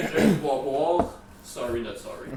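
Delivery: ordinary delivery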